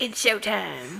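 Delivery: put-on trash-talk voice. Opening a talk about four shows, in a trash-talking voice. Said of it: "That was my talking trash voice".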